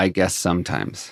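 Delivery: very quiet, hushed, softly spoken. Retelling how a guest answered a question, very quiet. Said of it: "he just very quietly says".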